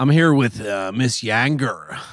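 best-attempt Florida accent. Introducing Miss Yanger as a joke, with your best attempt at a Floridian accent. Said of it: "It's my best Floridian accent".

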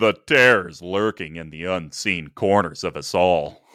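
voice dropped way down. Reading a card's flavor text as Joe from Family Guy: Patrick Warburton voice. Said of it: "That's a really good Patrick Warburton".

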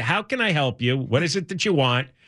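ordinary talk, nothing marked

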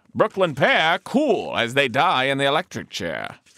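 put-on old-timey, vintage New York accent. Reading the first line aloud, old-timey new york accent. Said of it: "I'll do the first line, old-timey".

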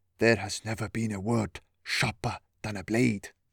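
conspiratorial, leaning-in stage whisper. Bracchus leans down to share a secret: mock whisper. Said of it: "lowered his voice to a mock whisper".

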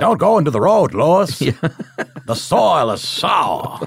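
put-on loud New England accent. Describing the warning character from Pet Sematary, doing a Fred Gwynne New England accent. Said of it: "Is that your New England?".

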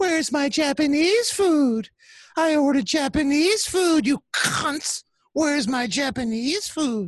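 put-on mad ranting, very high-pitched. Retelling how he'd get mad and go on Periscope, High Pitch Eric angry rant impression. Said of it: "he would get really mad and he'd go".

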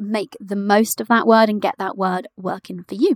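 ordinary talk

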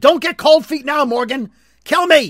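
high-pitched, loud, pushing yell. Retelling a TV scene where she yells at Morgan: imitating a character yelling. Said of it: "she's yelling at him".

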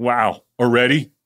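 mock remark, loud and carrying. Retelling what a guy said to the bathroom attendant: imitating a loud remark. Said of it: "he goes really loudly, so I can hear".

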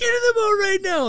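put-on yell. Retelling a story, quoting someone on a boat: imitating someone yelling. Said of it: "just yelling".

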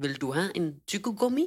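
put-on, foreign-sounding Danish accent. Speaker retells what an ambulance driver asked her, imitating a foreign accent. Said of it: "men havde en accent".

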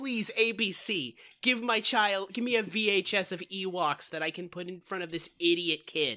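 plain

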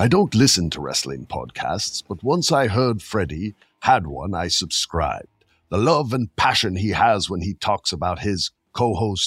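clumsy fake British accent with elderly old-man sound. Reading a written text aloud in a bad British accent. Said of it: "I got a bad one. ... It's going to sound like an old man".

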